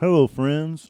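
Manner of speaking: mouth full while speaking. Greeting the friends with crackers in mouth, mouth full of crackers. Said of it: "delicious Ritz in my mouth right now".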